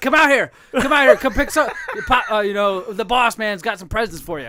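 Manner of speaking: mock hollering. Retelling how the boss called them over from his trunk: imitating the boss calling out. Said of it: "popped his trunk out front and said".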